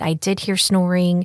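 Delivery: normal talking voice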